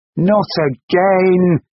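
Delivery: cried out, very high. Reading a novel aloud, the narrator voices a girl's retort to her former social worker, crying out. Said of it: "cried Gaia".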